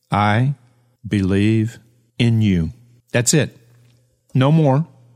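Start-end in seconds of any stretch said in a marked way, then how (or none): 0.1-2.7 whispered slowly and confidently. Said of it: "Lower your voice to a whisper".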